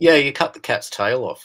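very loud, firm, joking, tongue-in-cheek. Invited to comment on a cat photo, pointing out its flaw, firm and tongue in cheek. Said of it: "I'm saying that firmly with my tongue in my cheek".

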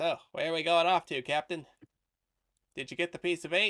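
friendly put-on kobold creature voice. Game master voices the kobold scribe coming up behind the captain: Bookworm, kobold scribe voice. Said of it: "As [name], your friendly kobold scribe".

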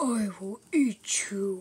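loud, slow, deliberate voice. Playing with toys, showing how the next one acts: Jumbo Josh voice. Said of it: "He's like".

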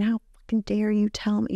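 acted, raging, out-of-control, high-pitched furious scream. Retelling an ex's rage over a fire: imitating a furious scream. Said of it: "he was furious with me, screaming".

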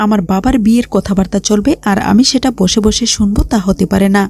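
ordinary talk, nothing marked

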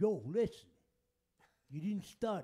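booming movie-teacher voice. Imagining a college teacher who sounds like Sylvester Stallone: Sylvester Stallone voice. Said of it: "have a teacher like that".

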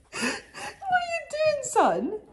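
high, slow, doting cooing pet voice.

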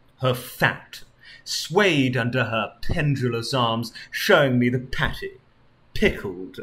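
ordinary delivery, nothing marked

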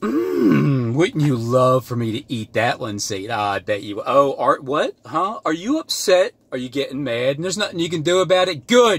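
needling, mocking, jeering gloat, drawn-out mm. Acting out Christ taking over while tempted by chicken: acting out mocking Satan. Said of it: "mocking Satan".

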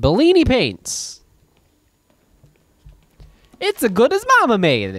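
very high, sing-song, swooping cartoon character voice. Making up a catchphrase slogan for Bellini paints, Mario voice. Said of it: "That was like your Mario voice".

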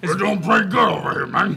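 laid-on, booming, hulking giant's voice. Voicing a gargantuan creature greeting the party: very deep giant voice. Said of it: "His voice is so deep you can't even hear it".

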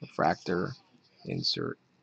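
deflated sadness, very low and quiet. Opening packs and calling out what he pulls, in a really sad voice. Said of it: "my voice just gets really sad".

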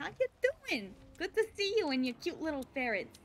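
put-on Brooklyn accent. Greeting someone and their ferret in a kind of Brooklyn accent. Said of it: "I'm doing a kind of Brooklyn accent currently".

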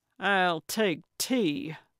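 speaking through clenched, gritted teeth. Gertrude answers Carlotta's offer of lemon or grapefruit, through gritted teeth. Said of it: "Gertrude said through gritted teeth".

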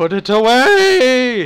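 voice breaking into a cracking, high yelp. Reacting to the game on screen, voice cracking. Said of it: "my voice cracked really bad there".

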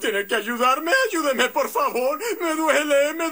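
sobbing from pain. Patient begging the doctor for help, crying in pain. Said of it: "Y no llores tanto".

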